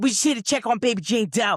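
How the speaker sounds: clumsy, bad put-on Pittsburgh Delco accent. Quoting a woman from this season's show about an abandoned baby, bad Dana impression, Pittsburgh Delco accent. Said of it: "I can't even do the accent right".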